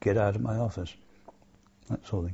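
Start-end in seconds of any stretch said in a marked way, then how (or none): none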